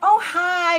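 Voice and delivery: shrill, very high, very loud, sugary fake-sweet. Imitating someone greeting a person on first meeting: imitating a falsely sweet voice. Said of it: "your voice changed and all this stuff".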